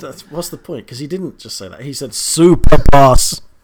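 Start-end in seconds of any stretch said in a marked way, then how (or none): 2.1-3.4 booming, very loud, playful joking shout. Repeating a name written in capital letters: loud joking shout. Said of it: "You just deafened about twenty-two people".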